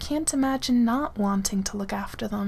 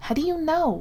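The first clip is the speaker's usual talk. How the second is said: sharp, snappy, pitched-up snap; 6 semitones higher than usual. [name] answers Derek's grumbling right away, snapping back. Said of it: "[name] snaps right back at him".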